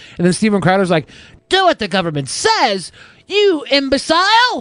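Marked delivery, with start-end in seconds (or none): 1.5-4.6 very high-pitched exclaimed voice. Retelling a podcast exchange, doing a Steven Crowder impression. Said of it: "That's a good Steven Crowder".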